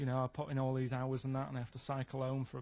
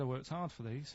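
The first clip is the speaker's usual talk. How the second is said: normal talking voice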